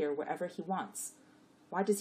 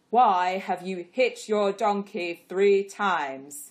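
thunderous, very loud, booming voice; 11 dB louder than usual. An angel confronts Bilaam, who bows before him, in a thunderous voice. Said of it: "The angel asked in a thunderous voice".

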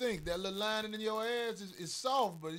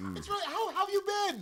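very high, squeaky put-on voice; 14 semitones higher, 4 dB louder than usual. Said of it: "They have a particular voice".

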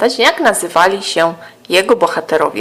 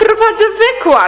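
very high voice shouted from a distance; 3 dB louder than usual. Dominik answering grandma calling from another room, shouted back. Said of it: "odkrzyknął dyplomatycznie Dominik".

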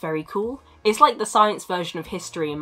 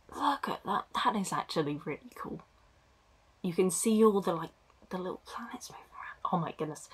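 whispering, much quieter; 9 dB quieter than usual. Reacting to an image of planets on screen, whispering. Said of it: "Why am I whispering?".

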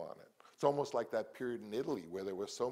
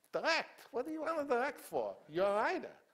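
very high, swooping, swinging sing-song voice; 14 semitones higher, 4 dB louder than usual. Retelling a visit to Sam Goldwyn at his studio: imitating Sam Goldwyn's way of talking. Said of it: "he talked like I'm gonna talk".

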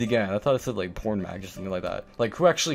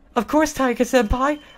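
put-on girlish voice, much higher, louder; 4 dB louder than usual. Voicing a female character's eager reply, in a girlish voice. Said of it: "I had to go and do a girlish voice for her".

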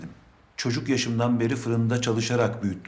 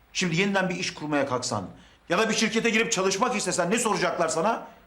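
full-throated, high-pitched angry shouting; 9 semitones higher than usual. A father speaking to his child, shouting. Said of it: "Bağırma bana baba".

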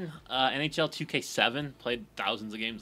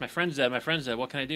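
normal talking voice

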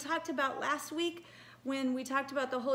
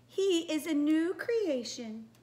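slow, lilting princess voice. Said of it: "my very, very best princess voice".

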